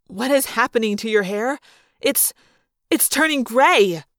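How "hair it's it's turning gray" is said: ordinary delivery, nothing marked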